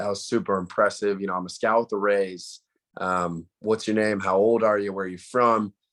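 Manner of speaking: ordinary talk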